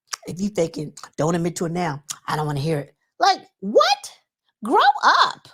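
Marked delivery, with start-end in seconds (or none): 0.2-2.9 put-on mumble, lower, quieter, faster. Recapping the talk about Kimmy: imitating Marceau mumbling under breath to Tisha. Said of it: "mumbling under his breath".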